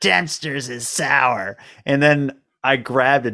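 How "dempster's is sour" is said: eerie, awful, barely human voice. Retelling what a woman repeated to you, in an awful, barely human voice. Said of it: "in this like awful voice that hardly sounded human".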